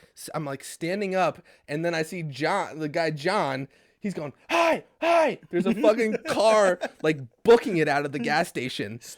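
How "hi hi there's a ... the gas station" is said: loud, high, swooping yell. Retelling a commotion at a gas station, quoting a man, imitating someone yelling. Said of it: "they're both yelling".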